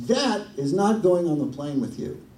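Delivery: acted loud, blunt declaration. Retelling what the woman at the gate counter said, pointing at him: loud voice. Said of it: "she says in a loud voice".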